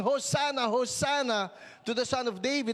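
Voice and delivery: ordinary talk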